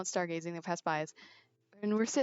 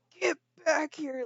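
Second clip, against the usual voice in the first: play-acted very high, shrill, loud scream; 9 semitones higher, 5 dB louder than usual. Recounting how the camp leader called the group back, retelling the camp leader's scream. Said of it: "like screaming".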